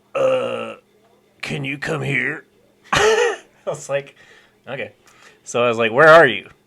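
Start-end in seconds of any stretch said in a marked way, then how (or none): 0.2-2.5 rough, creaky, slow, drawn-out voice. Reading out a text message he sent, imitating Joel's voice. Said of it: "I'm just gonna read it in his voice".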